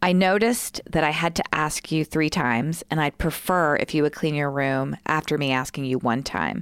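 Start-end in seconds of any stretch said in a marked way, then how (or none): none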